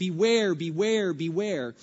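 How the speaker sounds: ordinary delivery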